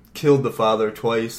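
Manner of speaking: ordinary talk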